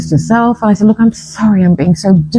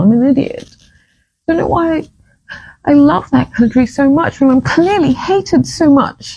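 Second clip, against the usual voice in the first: overcome, brimming with feeling, pitched-up outburst; 6 semitones higher than usual. Speaking after hearing the anthem and getting choked up, emotional. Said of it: "I'm so emotional".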